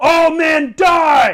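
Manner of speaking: yelled battle cry. Voicing the man in the center yelling to the archers: yelling battle cry. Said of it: "The man in the center yells out".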